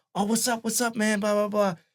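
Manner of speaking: acted gushing eager fan voice, very high pitch. Retelling how a friend ran up to a celebrity: imitating Jeff gushing like a super fan. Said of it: "he just runs up on Chappelle like a super fan".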